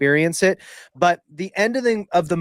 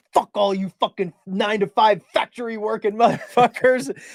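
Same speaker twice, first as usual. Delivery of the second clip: put-on drunken raging outburst, higher pitch; 5 semitones higher than usual. Retelling a film scene where a drunk son rages at his mom: imitating a drunken rage. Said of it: "he has that rage out".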